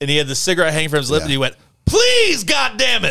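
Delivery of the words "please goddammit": mock very high, hoarse, shrill screaming outburst. Describing a movie scene, the speaker acts out a man screaming at a computer. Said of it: "And he just like screamed at the computer".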